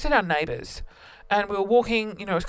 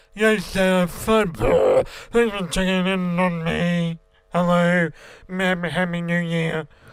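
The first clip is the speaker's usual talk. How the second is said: slow, slurred, acted drunk voice straining sober; 2 semitones lower, 4 dB louder than usual. Recalling talking to your dad at New Year, show how you really sounded, imitating own drunk voice. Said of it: "I actually sounded like this".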